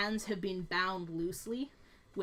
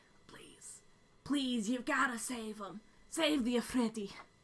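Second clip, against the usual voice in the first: put-on feeble, small, frail elderly voice; 3 semitones higher than usual. A game master voicing a pleading voice heard in the players' heads, small, old, frail voice. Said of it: "a small, old, frail voice that goes".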